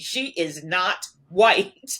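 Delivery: mock indignant, loud and very slow. Retelling what Mom said when asked about a sister's skin: imitating Mom speaking indignantly. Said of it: "she very indignantly said to me".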